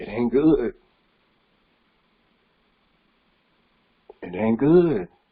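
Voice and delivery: emotional, slightly choked up, voice catching. Speaking about how we treat our mamas, getting a little emotional. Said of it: "I'm getting a little emotional".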